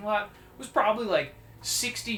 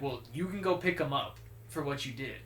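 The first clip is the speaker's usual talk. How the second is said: ordinary delivery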